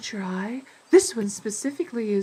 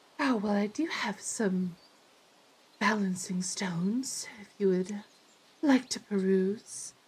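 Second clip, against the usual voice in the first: wispy woman's character voice; 4 dB quieter than usual. Voicing a wispy-looking woman at a stand greeting a customer: voicing a wispy-looking woman. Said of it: "she's like".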